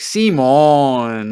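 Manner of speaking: loud, sarcastic tone. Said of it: "we say it, like, sarcastically to each other".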